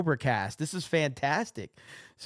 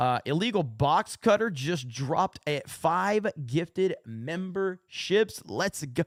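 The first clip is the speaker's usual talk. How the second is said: normal talking voice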